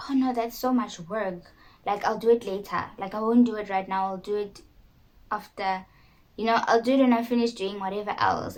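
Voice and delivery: ordinary talk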